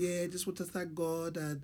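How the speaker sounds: shoddy, soft put-on Mexican accent. Quoting what a fighter said after the fight, the speaker uses a bad mexican accent. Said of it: "I got a shit Mexican accent".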